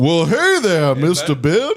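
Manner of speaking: high, swooping cartoon voice. Imitating a friend as the sun in a Walt Disney cartoon. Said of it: "he's like the sun in a Walt Disney cartoon".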